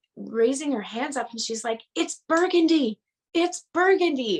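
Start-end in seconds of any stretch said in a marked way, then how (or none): 2.0-4.4 urgent, repeated, high, insistent scream. Recounting a dream in which she screamed at you; retelling a scream. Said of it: "she's screaming at me in my dream".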